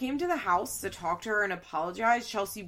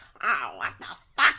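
put-on loud, babyish cursing outburst in baby voice; 4 semitones lower, 5 dB louder than usual. Retelling a scene where Cole starts cursing: Cole's baby voice. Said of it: "in his baby voice".

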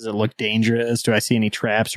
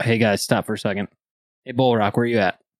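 usual speaking voice

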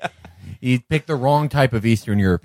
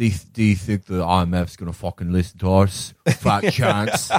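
put-on solid, convincing Mancunian accent; 2 semitones lower than usual. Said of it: "That's a good Mancunian accent".

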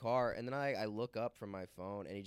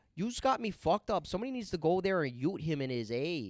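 loud, high put-on Toronto slang girl accent; 7 semitones higher, 6 dB louder than usual. Describing regional accents, the speaker demonstrates a Toronto slang accent. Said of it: "the Toronto accent".

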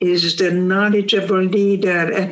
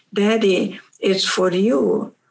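understated, discreet, confidential low-key delivery. Acting out a child telling the father about a phone call: imitating speaking very quietly. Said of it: "you tell your father very quietly".

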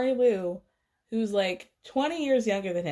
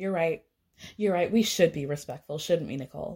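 mock-sarcastic, lower-pitched delivery; 4 semitones lower than usual. Recapping a baby shower argument, doing a mock-sarcastic Chrishell impression. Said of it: "So Chrishell has to be very sarcastic".

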